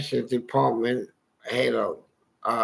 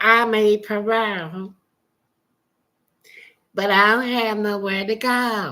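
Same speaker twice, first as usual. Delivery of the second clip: put-on high little baby-talk voice; 8 semitones higher than usual. Retelling what a man told a woman in church, imitating a little baby voice. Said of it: "Try to sound like a little baby".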